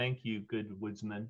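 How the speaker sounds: soft, leaning-in half-whisper. Narrator voicing a woman who leans in to thank the player, half-whispering in ear. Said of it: "leans in and whispers in your ear".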